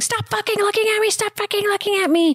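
very high, shrill screaming. Retelling a story of a woman screaming at her family, imitating her screaming. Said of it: "she's like screaming".

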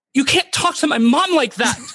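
very high, hard, acted-out confrontational yell. Retell how she came to the rescue against an aggressive man, imitating Megan yelling back, confrontational. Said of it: "very confrontational, yelling back at him".

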